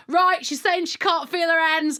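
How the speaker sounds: loud, confident, outspoken Cockney voice. Retelling what the other half told the theatre staff: imitating Jake's confident Cockney. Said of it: "like this".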